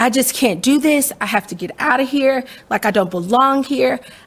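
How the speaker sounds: mock tearful crying plea. Retelling what was said to the dean while crying: imitating own past crying. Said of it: "I went to the dean and I was crying".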